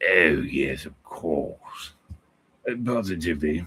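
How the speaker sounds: put-on elderly English gentleman's British accent. Showing they could fool people, in a put-on old British man accent. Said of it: "I could do like an old British man accent".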